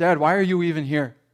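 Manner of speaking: ordinary talk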